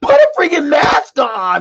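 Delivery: mock shrill, very high, loud yell. Retelling a woman at a store shouting at a stranger: imitating someone yelling. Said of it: "she was yelling".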